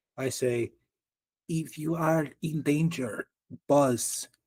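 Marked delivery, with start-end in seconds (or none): 1.5-4.3 slow, tiniest, hushed stage-whisper voice. Speaking in character to bees after getting really close: tiniest whisper. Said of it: "in my tiniest whisper".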